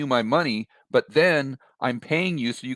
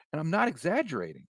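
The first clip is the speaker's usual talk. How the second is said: plain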